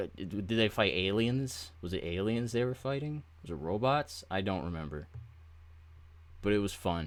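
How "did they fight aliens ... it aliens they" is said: ordinary delivery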